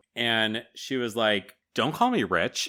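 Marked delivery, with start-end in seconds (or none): 1.7-2.6 offended, indignant tone. Retelling a character's reply to being called rich: imitating an offended retort. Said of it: "She's very offended by this".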